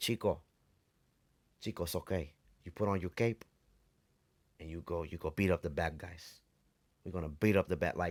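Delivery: put-on Cuban tough-guy accent. Retelling how the speaker's Batman used to talk, Batman in a Scarface accent. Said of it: "a Batman with the Scarface accent".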